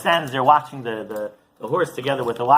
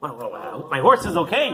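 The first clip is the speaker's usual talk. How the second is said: plain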